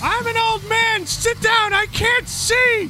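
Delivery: shrill, very high shouting. Retelling how a man yelled at people standing up for the wave: imitating a man yelling. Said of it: "he would start yelling at them".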